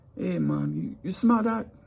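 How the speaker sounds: put-on strong Jamaican accent, very high and swooping. Retelling what a man at orientation asked people: strong Jamaican accent. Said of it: "he get into his accent because he had a strong accent".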